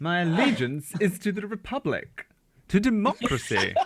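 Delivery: pitched way up, a little camp, posh voice. Talking about rewatching the movies, a speaker delivers a quote in a camp posh voice. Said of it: "I can't do Posh without it being a little camp".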